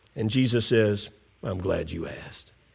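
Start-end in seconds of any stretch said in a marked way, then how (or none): 1.5-2.5 half-whisper under the breath, very soft. Retelling Jesus answering the question about neighbors: Jesus half-whispering under his breath. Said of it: "hear Jesus whisper under his breath".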